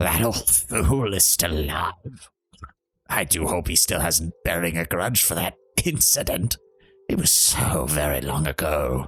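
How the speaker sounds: rattling, gurgling drowning-man voice on every word. Narrating a story, voicing a cackling figure, in a rattling, gurgling voice. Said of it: "his voice rattles and gurgles like that of a drowning man".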